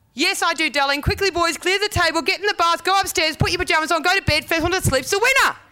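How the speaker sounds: rushed one-breath delivery. Answering him, then sending the boys to bed, as a retold rush in one breath. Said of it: "said in one breath".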